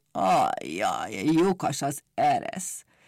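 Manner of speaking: low, very slow, sighed mumbling. Narrator reads Pompom's line as he first notices, in a mumbling sigh. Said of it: "dünnyögve sóhajtott".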